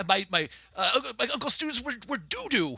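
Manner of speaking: very high, frenzied, manic raving rant. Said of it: "he goes into this rant and uproar".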